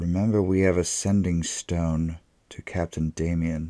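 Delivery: speaking very softly. Voicing a knight leaning into a companion's ear: speaking very softly into ear. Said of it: "lean into her ear and very softly say".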